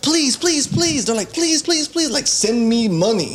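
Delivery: put-on acted high child begging. Retelling kids being made to scream at the camera, imitating screaming, begging. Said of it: "they have their kids screaming at the camera".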